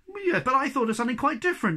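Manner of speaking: quick protesting tone. Narrator reads the snork's reply to the hobgoblin, protesting. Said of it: "protested the snork".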